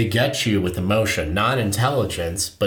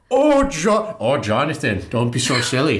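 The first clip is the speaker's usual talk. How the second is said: put-on Irish accent, much higher; 5 semitones higher, 3 dB louder than usual. Speaker repeats what Mair said to Jonathan: imitating Mair's Irish accent. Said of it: "that was a perfect Irish accent".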